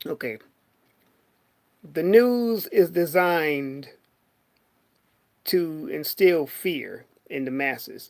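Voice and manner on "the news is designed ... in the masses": deliberately slowed down, much slower pace. After stuttering, the speaker slows down to get their words together. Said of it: "Let me slow down".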